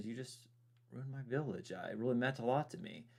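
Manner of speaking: said very softly, hushed. Recalling what a man said about his ruined village: imitating him speaking softly. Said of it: "He just said it very softly".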